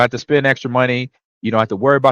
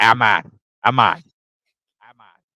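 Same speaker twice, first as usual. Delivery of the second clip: imitated Boston accent, "Imma" in Boston accent. Recalling how his coach said his name, Mike Sherman Boston accent. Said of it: "he kinda talk like this".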